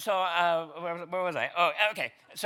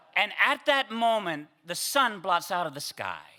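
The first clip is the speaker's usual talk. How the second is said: ordinary delivery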